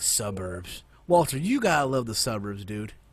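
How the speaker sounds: mocking, tongue-in-cheek sarcastic enthusiasm. Talking about the suburbs with another speaker: sarcastic. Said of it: "stop with that sarcastic bullshit".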